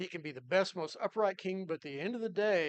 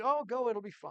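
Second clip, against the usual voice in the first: insincere, mocking, sarcastic tone; 3 semitones higher than usual. Retelling a prophet's answer to a king: imitating a sarcastic reply.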